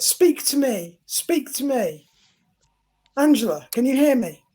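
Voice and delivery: commanding, controlling tone. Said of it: "almost controller".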